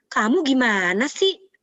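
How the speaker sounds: high, lifted intonation. Showing how intonation changes meaning in Indonesian: high pitch. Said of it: "Nah itu intonasi tuh tinggi ya".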